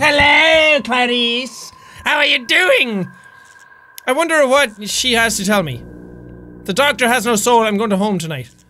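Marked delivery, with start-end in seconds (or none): 0.0-3.1 eerie, unsettling, creepy woman's voice. Describing a game scene, imitating a creepy lady outside: imitating a creepy lady. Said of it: "creepy lady outside going".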